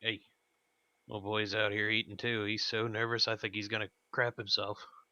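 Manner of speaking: mumbled, low side comment. Muttering to the others at the table about a nervous diner: muttering under breath. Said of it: "just kinda mutter and look at the others".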